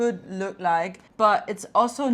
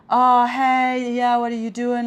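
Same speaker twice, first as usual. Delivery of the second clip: pushy, intrusive, flirty guy voice; 3 semitones higher, 6 dB louder than usual. Retelling how straight men came up in a bar: imitating a straight man hitting on them. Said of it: "they would be like".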